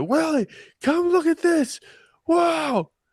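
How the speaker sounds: very high-pitched shout. Retelling a childhood story, imitating their dad yelling at them, retelling dad yelling. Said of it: "he's yelling at me".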